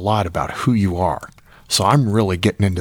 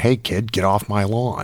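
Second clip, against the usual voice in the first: put-on grumpy old-man voice, slower pace. Teasing someone not yet 20, imitating a grumpy old man. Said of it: "you're already grumpy old man".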